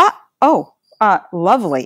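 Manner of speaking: slow, swooping, sarcastic passive-aggressive tone. Retelling a first spontaneous reaction to it happening, imitating own sarcastic remark. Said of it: "and it was sarcastic".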